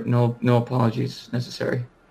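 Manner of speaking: said quietly in a hushed voice. Replying to a woman's apology, quietly. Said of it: "I just quietly say to her".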